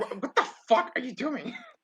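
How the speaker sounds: very high, distraught crying outburst. Telling a story about a man pushing a woman away, acting out his distraught outburst. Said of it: "immediately fucking like like like distraught".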